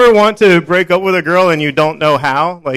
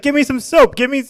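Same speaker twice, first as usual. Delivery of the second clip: put-on berating voice, much higher; 8 semitones higher, 3 dB quieter than usual. Retelling how a woman in the shower yelled at him, mock-berating demand. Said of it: "just berating me".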